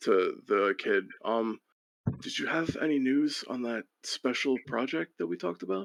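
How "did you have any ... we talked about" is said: high, hushed half-whispered voice. Voicing a character asking the kid about a special project: half-whispering in character. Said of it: "he kind of whispers".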